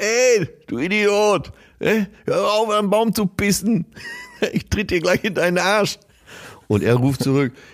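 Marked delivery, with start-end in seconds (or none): 0.0-6.0 play-acted shrill, very high scolding yell. Retelling how an older resident shouts from her balcony at a man, retelling older resident's balcony shout. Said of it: "so eine ältere Anwohnerin von ihrem Balkon runter".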